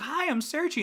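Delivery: put-on very high, loud, squeaky small kid voice. Imitating a robot antagonist greeting before it attacks: very kid voice as Searchy. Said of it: "in a very, very kid voice".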